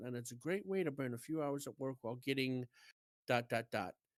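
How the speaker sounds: normal talking voice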